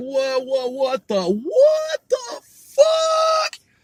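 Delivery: high, rising, stunned blurted-out shout.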